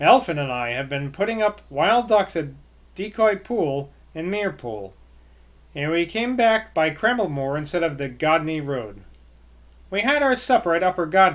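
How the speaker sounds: plain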